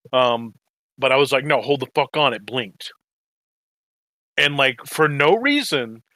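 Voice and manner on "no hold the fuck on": acted panicked outburst, frantic and freaked-out. Recalling watching an episode with friends, retelling a freak-out. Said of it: "I freaked out in the middle of it".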